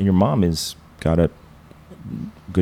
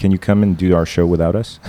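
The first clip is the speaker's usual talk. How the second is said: usual speaking voice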